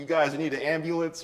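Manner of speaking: put-on frightened, jittery, uneasy voice. Retelling police who stopped to ask about an ambulance: imitating scared police. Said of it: "they were hella scared".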